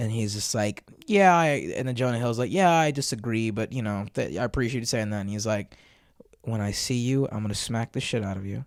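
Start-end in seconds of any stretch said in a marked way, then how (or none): 6.4-8.7 put-on level, unbothered, calm, flat monotone deadpan. Retelling what he said, in a mock-calm flat monotone. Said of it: "in a very calm, monotone voice, very calm".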